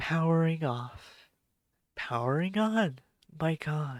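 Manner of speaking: slow, breathy device voice. Imitating the headphones' startup voice prompt: imitating breathy headphone voice. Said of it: "The voice is very breathy for my headphones".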